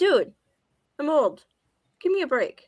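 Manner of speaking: high, loud yell like a howling husky. Voicing the dog when the speaker moves too slowly: imitating a dog yelling. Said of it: "the husky howl where he's yelling at me".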